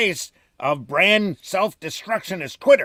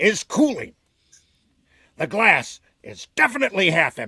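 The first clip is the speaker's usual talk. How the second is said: hyped-up, excitable, eager comic-book showman voice. You have been asked to read this aloud as Stan Lee; do a Stan Lee voice. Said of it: "could you read this as Stan Lee?".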